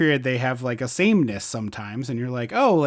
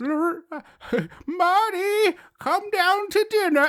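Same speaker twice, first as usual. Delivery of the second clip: very high, very drawn-out cartoon granny voice. Mocking a movie's casting, the speaker mimics a mother calling marty: cartoon old lady voice. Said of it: "You are doing a cartoon old lady voice".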